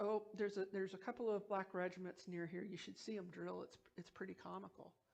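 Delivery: normal talking voice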